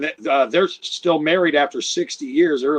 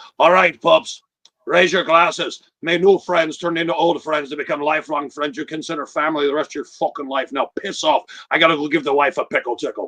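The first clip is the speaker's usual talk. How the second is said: put-on Scottish brogue. Retelling a man's parting toast to everyone, in grandpa's scottish brogue. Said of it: "I'll do it in my grandpa's Scottish brogue".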